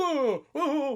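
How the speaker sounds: high, loud freaking out. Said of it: "while he's freaking out".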